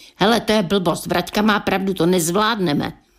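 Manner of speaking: ordinary delivery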